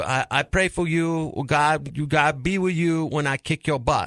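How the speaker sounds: slow speech in a Filipino accent.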